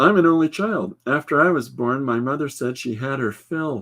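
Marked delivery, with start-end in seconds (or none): none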